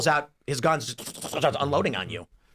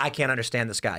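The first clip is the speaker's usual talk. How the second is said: ordinary talk, nothing marked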